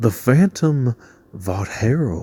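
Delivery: slow, breathy, cartoonish Texas drawl. Saying a character's name aloud, in a King of the Hill style accent. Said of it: "in a King of the Hill style accent".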